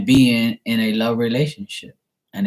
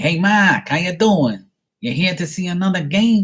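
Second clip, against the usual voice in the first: put-on distinctly different, pitched-up Boston accent; 8 semitones higher than usual. Describing how Boston locals greet him, imitating a Boston accent. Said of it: "That's how the Boston people talk".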